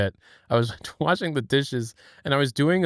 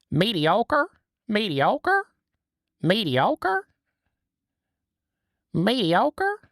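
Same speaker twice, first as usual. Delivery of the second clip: slow, drawn-out cartoon voice swooping up high; 8 semitones higher than usual. Showing the one word they can say confidently in a Squidward voice. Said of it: "The only thing I'm confident saying in the Squidward voice is um mediocre".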